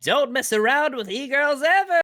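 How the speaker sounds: put-on very high, loud baby voice. Performing a requested line in a baby frick voice. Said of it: "in your baby frick voice".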